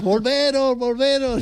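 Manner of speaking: very high mock shout.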